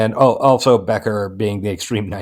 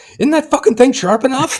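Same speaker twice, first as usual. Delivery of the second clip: mock very high-pitched furious yelling; 4 dB louder than usual. Recounting a video where Ross yells at a man about a knife, retelling Ross's yell. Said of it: "Ross is yelling at him".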